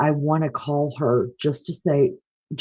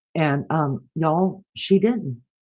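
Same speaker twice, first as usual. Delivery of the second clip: ordinary delivery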